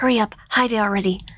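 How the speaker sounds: rushed, harsh whisper. Reading a scene where the kid urges you to hide a letter: harsh whisper. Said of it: "kid rushes you in a harsh whisper".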